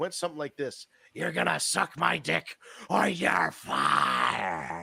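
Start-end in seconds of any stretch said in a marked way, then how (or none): 1.1-4.8 very slow, rough, creaky, swooping, drawn-out delivery. Retelling a joke answer at a bar in a Vince McMahon voice. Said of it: "You sounded just like him".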